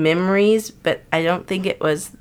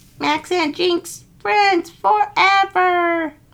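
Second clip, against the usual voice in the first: bad robot impression, much higher; 12 semitones higher than usual. Asked for a quote from Jinx, giving a terrible Jinx impression. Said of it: "That's a terrible impression".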